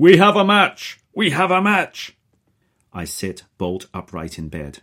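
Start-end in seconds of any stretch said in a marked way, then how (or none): 0.0-2.2 thrilled, excited yelling, very loud and very high. [name] calls at 3:55 a.m. and is heard through the built-in speaker, yelling out. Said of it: "The unmistakable voice of [name] yells out".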